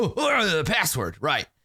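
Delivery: put-on, swooping, sing-song bugbear character voice. Narrating a scene and voicing one of the bugbears, in a put-on bugbear voice. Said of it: "the bugbear is like".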